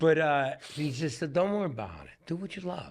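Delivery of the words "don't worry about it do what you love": put-on laid-on broken Italian accent, high and swooping. Retelling a father's advice, imitating father's broken Italian accent. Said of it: "he had the broken accent".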